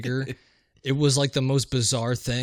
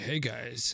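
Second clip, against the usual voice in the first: mock muttered delivery, under the breath, quieter; 8 dB quieter than usual. Retelling a stranger calling to passers-by: imitating someone saying it under his breath. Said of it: "under his breath as we were walking by".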